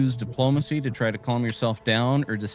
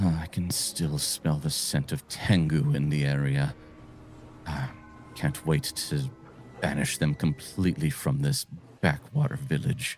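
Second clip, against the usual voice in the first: muttering under breath, lower and quieter; 8 semitones lower, 5 dB quieter than usual. Narrating a scene, voicing a woman the listeners overhear, muttering under her breath. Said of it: "You hear her mutter under her breath".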